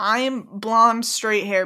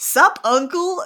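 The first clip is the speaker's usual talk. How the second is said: cocky, offhand sass, pitched up; 7 semitones higher, 4 dB louder than usual. Imitating Percy walking up to his uncle: imitating sassy Percy. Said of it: "I low-key love how sassy Percy is".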